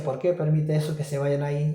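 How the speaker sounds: plain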